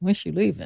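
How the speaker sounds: soft, hushed, voiced stage whisper. Retelling how the brother asks when his sister leaves: imitating someone half-whispering. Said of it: "He's always whispering like".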